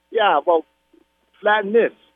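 real, native-sounding New York accent. Speaker on the radio answers the lockdown promises, in a new york accent. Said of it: "Now you sound like a real New Yorker".

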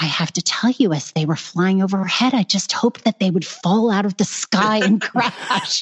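put-on very sweet, sugary little old-lady voice. Retelling what a little granny said to her, imitating a very sweet voice. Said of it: "in this like very sweet voice".

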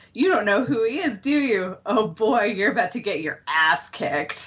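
acted, gleeful, confident delivery. Recapping a favorite scene, quoting Cordelia as she lights up. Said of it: "Cordelia just, like, lights up".

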